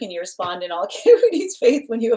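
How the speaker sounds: giggly voice, words breaking into laughter. Calling the next person on the list, laughing while talking. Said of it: "I just keep on laughing".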